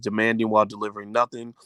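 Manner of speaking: ordinary talk, nothing marked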